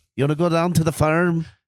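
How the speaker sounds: put-on Irish accent. Talking about doing accents, one speaker acts out a line: Irish accent. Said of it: "Irish accent".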